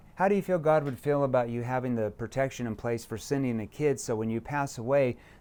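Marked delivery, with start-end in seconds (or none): 0.2-3.5 level, unvaried, flat one-note monotone delivery. Showing how the prospect question would sound with a monotone voice. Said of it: "if I said it like this with a monotone voice".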